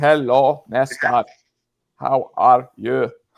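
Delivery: loud, very slow drawl, every word dragged out. Retelling how a caller greeted the mascot, imitating Mick's super slow speech. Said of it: "started speaking super slow".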